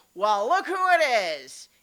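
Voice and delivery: boisterous, rowdy, very loud and swooping. Voicing the duck skipper Tondrick Brickle calling from the door; boisterous voice. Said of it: "boisterous voice from the uh, from the door say".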